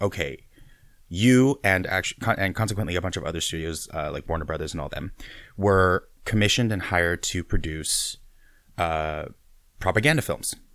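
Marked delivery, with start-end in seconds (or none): none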